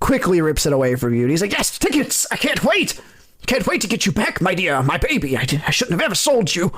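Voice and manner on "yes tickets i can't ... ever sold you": eager, gushing, excited cat voice with swooping pitch. Voicing a cat guard who rips the ticket away: excited cat guard voice. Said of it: "he's excited".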